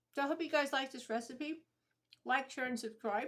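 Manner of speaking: speaking with mouth full, chewing audibly.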